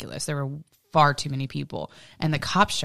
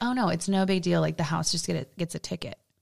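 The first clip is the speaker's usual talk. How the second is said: usual speaking voice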